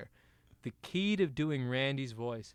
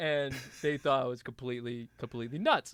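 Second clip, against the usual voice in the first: usual speaking voice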